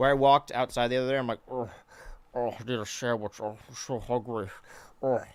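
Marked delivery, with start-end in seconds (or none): 1.5-5.2 ravenous large-man character voice. Retelling walking outside and doing the bit: big hungry guy voice. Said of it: "my big hungry guy voice".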